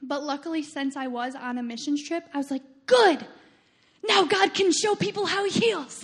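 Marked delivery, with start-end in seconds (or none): 2.9-6.1 loud, high, thrilled outburst, acted. Recalling an injury on a missions trip, quoting their past self: retelling excited words. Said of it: "And I was really excited".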